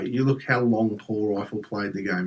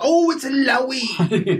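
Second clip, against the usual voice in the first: high, loud mock scream into mic. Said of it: "will scream down the mic".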